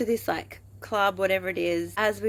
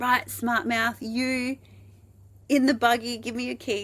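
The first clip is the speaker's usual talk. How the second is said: mock police officer voice, yelling; 5 semitones higher than usual. Retelling how a cop ordered them into the buggy: imitating a yelling cop. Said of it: "the cop yelled at me".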